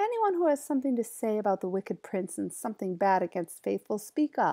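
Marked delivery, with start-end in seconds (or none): none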